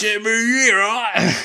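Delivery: high, loud, mashed South Carolina Australian drawl.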